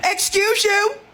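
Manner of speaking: put-on pointed delivery, very loud and very high. Retelling turning toward a woman who was rude to her, retelling a loud retort. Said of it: "very loudly say".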